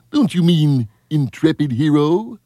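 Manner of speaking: very high-pitched cartoon moose voice. Retelling a movie moment after the narrator's line, in Bullwinkle voice. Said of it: "And then Bullwinkle says".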